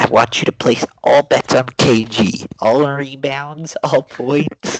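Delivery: loud voice pushed through a pinched nose. Doing an impression from a movie, pinched-nose nasal voice. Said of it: "I have to pinch my nose to do the Adam Sandler and Uncut Gems impression".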